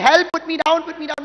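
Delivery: very loud, high, panicked hysterical shrieking. Recounting being carried off at a concert, the speaker retells screaming hysterically. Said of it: "I'm like screaming hysterically".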